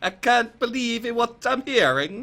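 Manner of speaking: high put-on Italian accent with an Italian lilt. Asked by another speaker to read the line, the speaker does it in an Italian accent. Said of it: "Read read it in an Italian accent".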